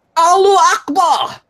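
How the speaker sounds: very high put-on accent, oddly Scottish. Recounting an attack, quoting the attacker's shout: put-on accent, came out Scottish. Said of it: "and I will do the accent".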